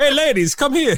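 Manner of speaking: vampire voice, pitched very high. Joking about Dracula making it rain for a t-shirt contest: Florida vampire voice. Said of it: "It's like the fucking Florida vampire".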